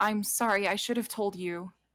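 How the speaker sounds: put-on voice that sounds like crying. Voicing Ysera, overheard by a passing player character: Ysera crying. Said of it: "Ysera is, like, crying".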